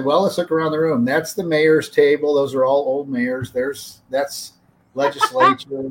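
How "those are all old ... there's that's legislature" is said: ordinary talk, nothing marked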